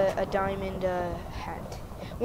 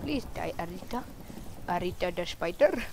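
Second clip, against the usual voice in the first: mock Indian-accented English; 5 dB quieter than usual. Fighting a really tough spider, the speaker uses a put-on indian accent. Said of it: "You have a really good Indian accent".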